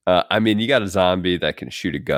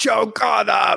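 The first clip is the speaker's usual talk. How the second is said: put-on very high, spiteful, rasping yell. Recalling a memorable movie line, the speaker acts out Rhodes yelling. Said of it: "Rhodes just starts yelling".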